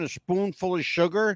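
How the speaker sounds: ordinary talk, nothing marked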